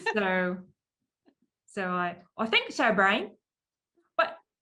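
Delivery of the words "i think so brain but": put-on cartoon mouse voice, higher and louder. Showing how the Pinky voice was done back and forth: Pinky voice. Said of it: "my Pinky voice".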